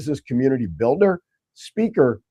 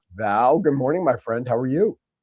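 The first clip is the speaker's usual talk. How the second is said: ordinary talk, nothing marked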